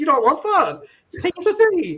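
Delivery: high, sweet, teasing sing-song coaxing voice.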